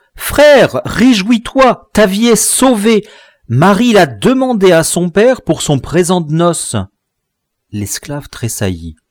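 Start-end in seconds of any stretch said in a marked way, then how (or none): 0.2-6.8 raised, high crying out. Entering the fort, the narrator greets Pierrot, crying out. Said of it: "lui criai-je en entrant".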